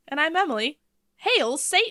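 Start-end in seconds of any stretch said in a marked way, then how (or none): 1.1-1.9 cheery, high, cheering exclamation. Opening the show with a greeting: exclaimed Hail Satan. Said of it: "I put the wrong emphasis on it".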